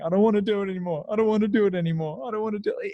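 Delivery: mock tearful, high, sobbing and crying. Retelling a breath work session, imitating own past crying. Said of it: "and I'm crying, saying".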